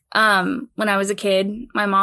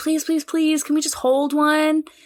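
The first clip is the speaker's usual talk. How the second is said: high, begging, pleading voice; 7 semitones higher than usual. Retelling begging a parent to hold a free puppy: imitating childhood begging. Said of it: "we were like".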